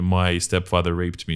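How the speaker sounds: normal talking voice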